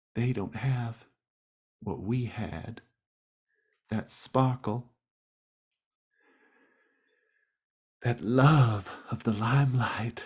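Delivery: tearful, welling-up voice lifted high. Voicing Dolores, who has tears in her eyes: tearful. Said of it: "she's got tears in her eyes".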